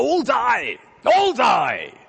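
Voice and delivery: very loud, very high, drawn-out, unhinged shriek. Recounting a guard losing it when no soldier steps forward: retelling a shriek. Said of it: "he shrieks".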